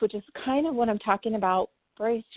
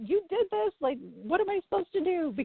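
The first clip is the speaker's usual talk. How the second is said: acted yelling and crying, much higher; 9 semitones higher than usual. Recalling talking to God, the speaker re-enacts yelling and crying. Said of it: "I was like yelling and crying".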